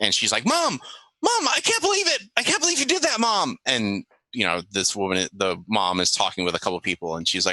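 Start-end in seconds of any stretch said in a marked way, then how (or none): 0.5-3.6 giddy, very high, excited squeal. Telling a story, acting out a daughter jumping up and down at her mom: imitating Darlene's excitement. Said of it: "she starts jumping up and down excitedly".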